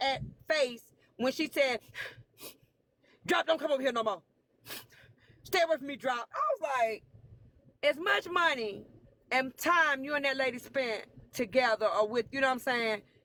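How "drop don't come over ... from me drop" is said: bitter, venomous, vitriolic, dismissive tone. Retelling what she said to Drop: imitating a vitriolic tone. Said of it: "The vitriol that was in her freaking".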